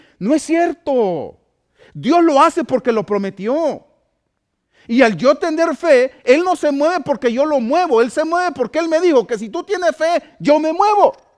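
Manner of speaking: very high emotional voice. Speaking about faith and what god promised, raised voice, emotional. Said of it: "Ya levanté la voz, perdón. Me emociono".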